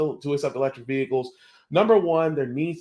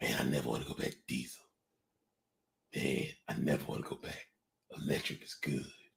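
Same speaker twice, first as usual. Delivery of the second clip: low put-on voice, deep, hushed, breathy near-whisper; 13 semitones lower, 14 dB quieter than usual. Having just heard a man's voice on an NBC News report, copy him, imitating a man's deep voice. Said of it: "I kind of want old boy's deep voice".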